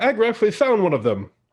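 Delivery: very high, loud calling shout. Voicing a drow calling over to another drow: shouting across to someone. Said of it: "he shouts over to another drow gentleman".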